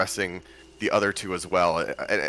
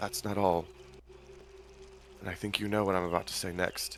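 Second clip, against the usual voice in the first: gentle, soft, hushed whispered voice; 9 dB quieter than usual. A character steps forward and looks at another character, speaking in a soft voice. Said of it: "in sort of a soft voice".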